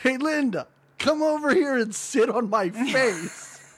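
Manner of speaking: mock, high, hollered yell. Retelling a guy down the hall calling to Linda: imitating someone yelling.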